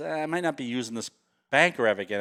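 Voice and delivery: ordinary talk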